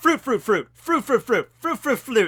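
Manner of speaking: loud, high, rapid-fire rattled-off delivery.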